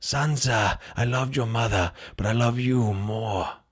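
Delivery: low, quiet, understated villain voice, nothing overplayed. Running through movie villain voices, moving on to a more subtle villain. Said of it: "Or a more subtle villain".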